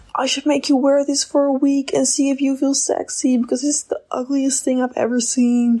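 mock high-pitched shouted tirade. Retelling what a boss would yell holding a dress: imitating someone yelling. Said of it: "yell at you".

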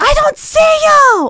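yelling. Retelling a first phone call with a date who was mad: imitating someone yelling. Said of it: "the Israeli man yelling on the phone".

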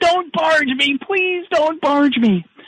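very high-pitched, desperate, pleading tone. Retelling a story, the speaker acts out a roughed-up man begging: imitating Bryn pleading. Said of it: "he's pleading".

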